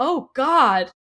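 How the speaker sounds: very loud, high-pitched cry of dismay. Retelling a movie scene where kids crash through a family's doors: imitating a woman's dismayed "oh God". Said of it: "you hear this woman go".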